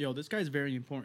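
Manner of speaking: normal talking voice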